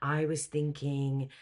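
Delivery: ordinary delivery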